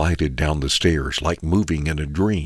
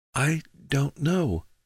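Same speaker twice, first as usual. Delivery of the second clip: faint, weak, very high voice choked with fear; 11 semitones higher, 4 dB quieter than usual. A frightened woman, asked if she is all right, weak and choked with fear. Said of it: "she said weakly, her voice sounding choked".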